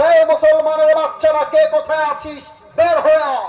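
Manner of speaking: high-pitched, loud shout with a challenging tone.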